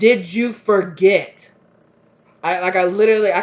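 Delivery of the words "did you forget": very slow, booming divine voice. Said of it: "I'm hearing, like, a booming voice".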